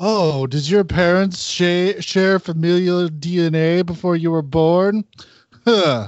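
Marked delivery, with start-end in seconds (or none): 0.0-5.0 high, pompous, pretentious Shakespearean stage-actor delivery. Imitating a movie cop insulting someone: imitating a pretentious stage-trained actor. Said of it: "Shakespeareanly trained at the local regional theater".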